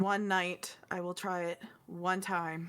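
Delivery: slow, reluctant, grudging, begrudging tone. Voicing a character who agrees to try a drink: begrudging. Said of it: "it's a begrudging".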